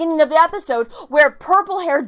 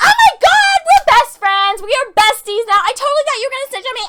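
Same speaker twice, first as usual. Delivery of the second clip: high, grating, obnoxiously over-friendly voice; 8 semitones higher, 3 dB louder than usual. Retelling an episode scene, imitating a character being obnoxious. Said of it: "she's being as obnoxious as I am right now".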